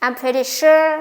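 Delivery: unfinished upward lilt, rising pitch on "sure". Intonation lesson, unfinished sentence opener with rising pitch on 'sure'. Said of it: "rising intonation because the sentence is not finished yet".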